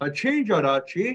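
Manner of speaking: Hachinjarachi said with pitch rising at the end. Teaching that questions raise the voice: rising pitch at end of 'Hachinjarachi'. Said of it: "When you ask a question, the voice raises up".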